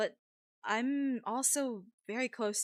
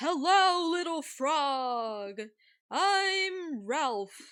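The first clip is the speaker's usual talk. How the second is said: high, loud hollering, I'm stretched out; 5 semitones higher, 6 dB louder than usual. Ralph greeting a little frog in a game scene, yelling. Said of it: "Why are you yelling?".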